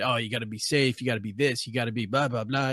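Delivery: fatherly, cautious, lecturing voice. Retelling how a character always cautions Ollie: imitating Diggle's fatherly voice of reason. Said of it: "He's like that fatherly voice of reason".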